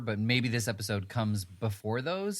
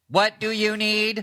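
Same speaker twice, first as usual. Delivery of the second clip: put-on old sixties computer voice, very high, loud, slow; 12 semitones higher, 10 dB louder than usual. Acting out the ship's computer answering a request: sixties robot voice. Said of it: "the sixties robot voice".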